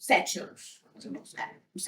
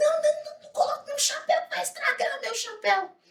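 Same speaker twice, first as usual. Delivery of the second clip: high, fast, panicked protesting voice. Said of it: "Ela falou assim".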